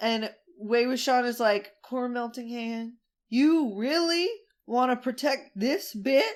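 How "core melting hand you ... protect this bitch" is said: put-on eerie, sinister spooky-boy villain voice. Recapping a drama scene with a co-host, spooky Wei Wuxian voice. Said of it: "Doing his spooky boy voice".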